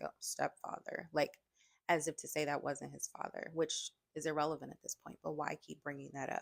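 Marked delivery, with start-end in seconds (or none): 0.0-1.1 put-on muttering under the breath. Retelling a boy's correction in an interview: imitating saying it under his breath. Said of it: "he kind of said it, like, under his breath".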